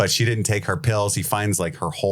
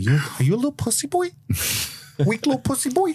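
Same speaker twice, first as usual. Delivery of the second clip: put-on very high, swooping Brooklyn old woman accent. Pretending to be an old lady while talking to the others, brooklyn old lady voice. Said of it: "in a Brooklyn accent, pretending to be an old lady".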